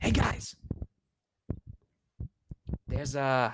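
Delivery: slow, loud stage whisper meant to carry. Speaking to the group about an owl bear, loud whisper. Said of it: "I'm gonna whisper loudly".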